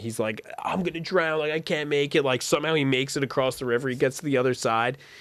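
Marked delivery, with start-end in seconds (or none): 0.6-2.2 mock scream held back near speaking level. Retelling a friend swimming across a river: imitating someone screaming. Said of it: "then he starts screaming".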